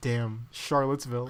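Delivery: grave, earnest, solemn and serious delivery. Retelling a friend's remark on the crowd: imitating a solemn, serious remark. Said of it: "very solemnly and very seriously just goes".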